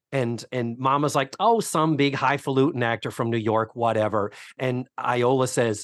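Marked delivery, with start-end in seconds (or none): none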